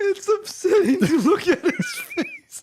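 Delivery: speaking through heavy laughter, very high and loud. Reacting to a zoomed-in profile picture: laughing hard while talking. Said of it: "You're laughing so hard".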